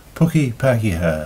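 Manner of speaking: ordinary talk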